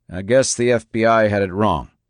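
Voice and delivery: ordinary talk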